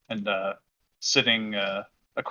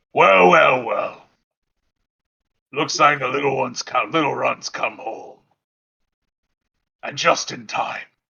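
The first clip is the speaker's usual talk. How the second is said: big, thunderous, booming dwarf bellow; 3 semitones higher, 5 dB louder than usual. As the others enter the room, Yagnat speaks: loud, booming voice. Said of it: "Yagnat says in a loud, booming voice".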